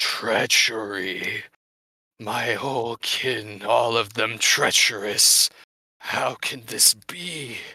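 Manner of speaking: restrained, held-in-check monster cry. Game narrator voicing a creature rearing its head back: monster screaming. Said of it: "you hear it scream".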